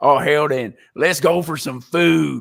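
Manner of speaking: put-on loud, over-the-top Texas accent. Retelling a reply to someone who keeps saying food, in an over-the-top Texas accent. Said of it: "over the top, stereotypical Texas accent".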